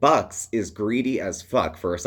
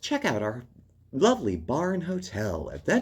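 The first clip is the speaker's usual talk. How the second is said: high TV promo announcer voice; 6 semitones higher, 3 dB quieter than usual. Describing how she mimics a hotel TV promo, in a hotel TV announcer voice. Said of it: "with the the announcer voice".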